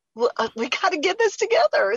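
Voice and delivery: high, eager, excited exclamation.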